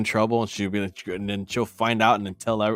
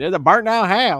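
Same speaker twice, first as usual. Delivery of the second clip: put-on deep, laid-on Southern accent, high and loud; 9 semitones higher, 7 dB louder than usual. Retelling a daughter's words when passing a burned house: imitating a deep southern accent. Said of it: "so deep Southern".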